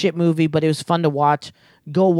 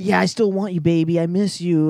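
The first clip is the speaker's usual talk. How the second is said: sleazy put-on voice. Acting out a sleazy movie character sweet-talking his ex: sleazy Eddie voice. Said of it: "he's like a sleazy sleazeball".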